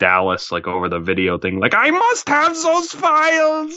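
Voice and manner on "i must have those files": put-on very high, slow German accent. Imagining Derek talking with Dallas over video, doing a Zemo impression with a German accent. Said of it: "why'd you suddenly get a German accent?".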